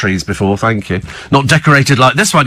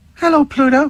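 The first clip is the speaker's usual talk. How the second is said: very high-pitched cartoon mouse character voice; 13 semitones higher than usual. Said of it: "Your Mickey Mouse impression sounds like [name]".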